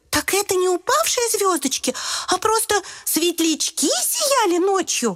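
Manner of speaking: very high-pitched cry of amazement. Narrator reads a letter character answering its friend, surprised exclamation. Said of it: "Удивленно воскликнула Е".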